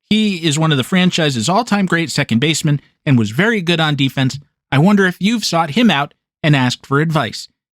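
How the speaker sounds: usual speaking voice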